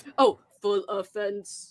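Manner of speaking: mechanical robotic voice. Told to read it in a robot voice, the speaker answers in robot voice. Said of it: "You have to read it in a robot voice".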